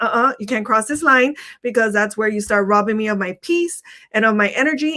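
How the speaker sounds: ordinary delivery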